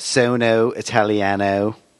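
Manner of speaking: imitated valley girl accent, mocking. Recalling a classmate in Italian class, imitating her valley girl accent. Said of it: "she talked like she was from the valley".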